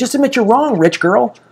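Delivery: mock screamed, yelled delivery. Retelling screaming at a car passenger in the street after a near miss, imitating screaming. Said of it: "And I'm screaming this on the street".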